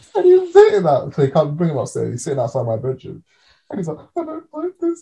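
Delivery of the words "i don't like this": very high-pitched weeping, crying voice. Speaker retelling what a housemate said sitting outside the bedroom, imitating him crying. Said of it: "And he's crying and stuff".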